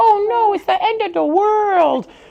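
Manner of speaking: put-on tiny babyish voice. Mimicking how she always talks, in a little baby voice. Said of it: "She always does like a little baby voice".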